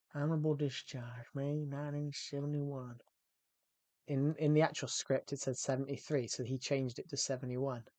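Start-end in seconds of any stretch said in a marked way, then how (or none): 0.1-2.9 put-on Texan-accented voice. Speaker rereading a script line for a Texan driver role, in a Texan accent. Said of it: "Was it a good accent?".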